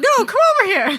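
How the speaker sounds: put-on, insistent, loud, high-pitched holler. Retelling a guy behind a fence calling out: imitating a man yelling. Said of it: "he just kept yelling as he was walking".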